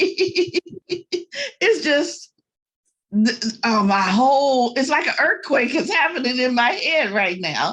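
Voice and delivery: speech broken up by laughter and giggles. Apologizing to a forum for being unable to stop: laughing while talking. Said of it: "I can't stop laughing. I'm sorry".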